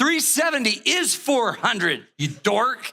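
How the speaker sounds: spooky possessed snarl, high-pitched scary demon voice. Retelling what she said in an argument, imitating her scary voice. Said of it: "And she talked like this. It was so scary".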